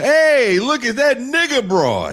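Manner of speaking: put-on Italian American accent. Acting out a passerby shouting at people on the street: put-on Italian American accent. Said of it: "I don't think I've ever met an Italian American that sounded like that".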